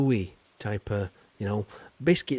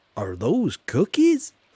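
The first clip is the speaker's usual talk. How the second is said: bad, loud, high-pitched put-on American accent; 5 semitones higher, 5 dB louder than usual. Quoting what americans often ask them: bad put-on american accent. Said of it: "Did you like my American accent there? It was a bit crap".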